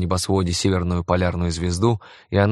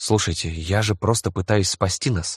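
usual speaking voice

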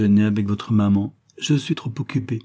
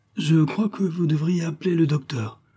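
faint, weak, feeble voice, high-pitched; 7 semitones higher than usual. Graham makes a suggestion to his mother, weakly. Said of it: "suggéra faiblement Graham".

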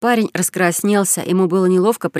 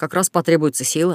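ordinary delivery

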